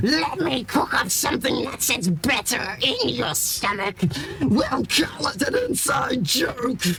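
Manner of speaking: very high, loud, bellowing monster voice. A game narrator voices the Twilit as it becomes a tentacled monstrosity, the Twilit bellowing. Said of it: "be it bellows".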